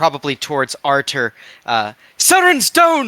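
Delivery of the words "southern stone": very high, loud, shouted in-character yell. Voicing a character who yells toward an ally mid-battle: in-character yell.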